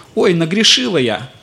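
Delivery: smirking, mocking, flippant lilt with laughter. Showing how people react to talk of sin, laughing, smirking tone. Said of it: "примерно с такой интонацией".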